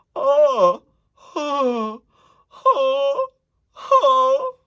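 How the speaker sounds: drawn-out, very high, very loud, whiny yawning wail. An instructor demonstrates a vocal exercise with a yawny, whiny sound. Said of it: "this yawny, whiny sound".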